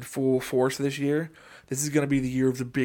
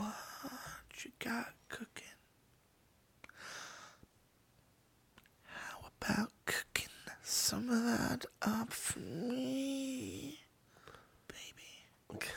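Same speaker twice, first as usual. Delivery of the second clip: joking put-on seductive voice, higher and quieter; 10 semitones higher, 15 dB quieter than usual. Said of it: "this is my sexy voice".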